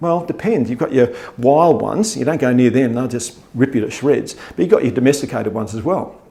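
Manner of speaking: ordinary talk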